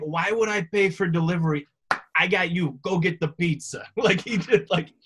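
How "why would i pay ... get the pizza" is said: put-on thick, heavy Chicago accent. Act out what your father said when you were growing up, in a thick Chicago accent. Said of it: "that thick Chicago accent".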